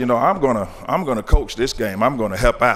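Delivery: ordinary talk, nothing marked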